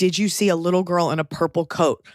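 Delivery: ordinary delivery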